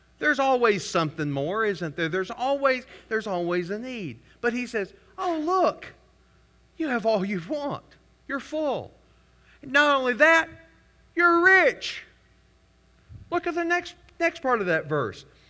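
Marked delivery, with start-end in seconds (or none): 5.2-12.0 high, dripping sarcastic tone of false praise. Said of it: "understanding the way Paul says this".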